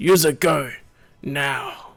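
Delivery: deep, severe, stern guard voice. Game master voicing a Gungan guard aiming his weapon at the players, deep severe Gungan voice. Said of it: "he says in a deep, severe voice".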